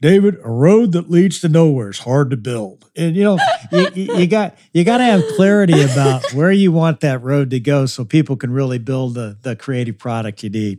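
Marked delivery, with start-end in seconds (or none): 0.0-2.8 put-on elderly cartoon-dog voice. Recalling a franchisee's advice to David, in an old Deputy Dawg voice. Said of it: "he had an old deputy dog voice".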